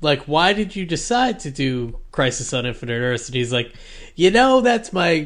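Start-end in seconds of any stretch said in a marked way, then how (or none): 4.1-5.3 exaggerated, loud, fake New York accent. Retelling a panel guest's answer, in a bad New York accent. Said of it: "I don't know why I'm, like, doing, like, a bad accent".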